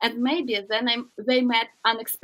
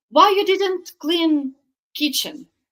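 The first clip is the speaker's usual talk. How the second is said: mock, loud, high-pitched, insistent shout; 5 semitones higher, 4 dB louder than usual. Retelling how her husband opened the door and spoke: loudly quoting her husband. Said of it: "loudly said".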